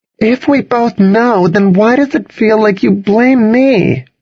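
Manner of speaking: very high-pitched, pressing, insistent voice. Charlotte confronts the narrator after an uncomfortable silence, demanding. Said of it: "Charlotte demanded".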